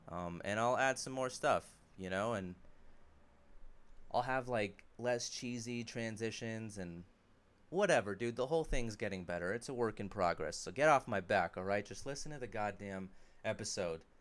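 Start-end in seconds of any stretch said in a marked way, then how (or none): none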